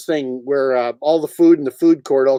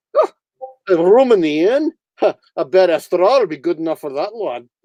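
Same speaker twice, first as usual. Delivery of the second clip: put-on comic Scottish accent, in character; 3 semitones higher than usual. After being told of a scottish accent, performing a scottish christmas history in put-on scottish accent. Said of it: "You never heard me Scottish".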